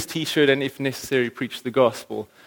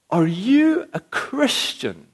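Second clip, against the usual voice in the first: put-on disgusted yell, pitched up, slow, full volume; 10 semitones higher than usual. Recalling a guy who turned and questioned them before others, retelling a shout. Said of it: "he said at the top of his voice".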